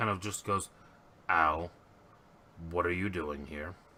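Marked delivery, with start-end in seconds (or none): 1.3-3.7 low, growling werewolf-like beast voice. Retelling what he said on finding someone there, in a growling voice. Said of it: "again in that growling voice".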